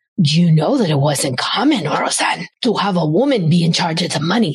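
put-on Italian-accented speaking voice. Retelling what the speaker's dad said, imitating dad's italian accent. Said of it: "he said it in his Italian accent".

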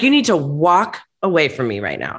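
ordinary talk

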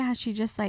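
ordinary talk, nothing marked

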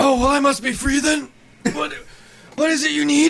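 very high-pitched, dying deathbed voice. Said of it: "like, dead, it was, like, on the deathbed".

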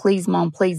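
mock tearful pleading voice. Retelling a son's calls to his mom: imitating someone begging and crying. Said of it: "begging, crying, begging".

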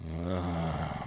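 deep growling voice.

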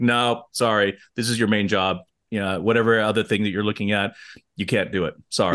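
ordinary talk

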